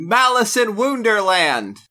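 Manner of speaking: very high-pitched, loud, all-out shout. Reading out a name written in all caps: shouted in all caps. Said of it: "I have to say this one appropriately".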